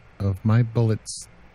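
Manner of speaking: ordinary delivery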